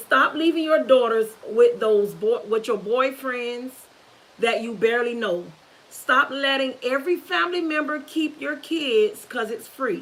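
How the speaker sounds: ordinary talk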